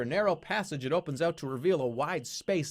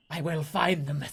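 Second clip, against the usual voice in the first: put-on hissing, old woman's voice. Narrating an old woman who suddenly grabs your leg, hissing. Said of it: "she hisses".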